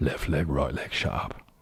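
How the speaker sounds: low voice, laid-on bad put-on Cockney accent. Voicing Alfie Strong, the speaker delivers his line in a terrible Cockney accent. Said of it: "With my terrible Cockney accent".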